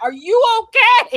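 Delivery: mock yelling. Retelling a son and his best friend checking in, imitating someone yelling.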